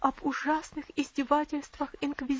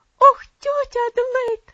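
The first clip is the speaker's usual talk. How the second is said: piercing, very loud, very high terrified near-scream; 11 semitones higher, 14 dB louder than usual. A little girl clings to her aunt Adelaide's neck: almost screaming in terror. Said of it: "почти завопила маленькая девочка".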